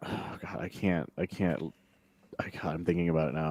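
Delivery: voice choking up with emotion mid-sentence. Talking about a moving episode's ending, getting emotional. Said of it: "I'm getting emotional".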